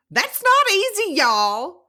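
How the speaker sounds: put-on Southern accent from Georgia. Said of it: "your ability to do these accents".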